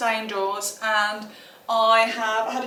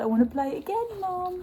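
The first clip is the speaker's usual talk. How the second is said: high-pitched put-on dog voice; 7 semitones higher, 6 dB quieter than usual. Voicing the dog as it asks to play again: voicing the dog. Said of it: "He's like".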